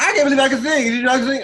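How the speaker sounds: very shrill, very high, very loud yelling. Imitating Priyanka in the confessional: Priyanka impression, yelling. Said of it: "she always talks like this when she's in the confessional".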